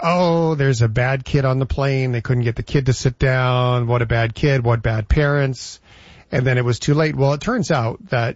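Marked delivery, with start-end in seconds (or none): none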